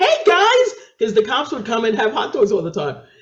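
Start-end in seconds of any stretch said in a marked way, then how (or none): 0.0-0.7 high, loud, cheery and chirpy. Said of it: "And I'm like".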